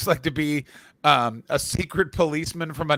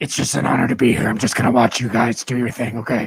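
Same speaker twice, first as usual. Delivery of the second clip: creepy put-on voice, much lower; 4 semitones lower, 4 dB louder than usual. A guest speaking to the hosts, in a creepy put-on voice. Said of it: "This is even creepier".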